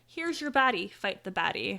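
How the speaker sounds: plain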